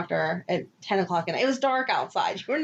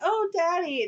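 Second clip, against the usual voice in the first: put-on high little small-child voice; 9 semitones higher than usual. Retelling how she said it in a scene they disliked: imitating a little kid voice. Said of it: "she said it in that little kid voice too".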